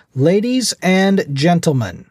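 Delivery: booming, high-pitched, very loud shout. A man stands to address a silent room, booming shout. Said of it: "In a booming voice he shouted".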